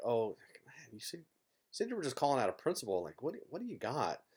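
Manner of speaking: mumbled, muttering, put-on unsure fretting. Player retells what he said to an opponent before calling, retelling a mumble. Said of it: "I Hollywood about it and I mumble a little bit like".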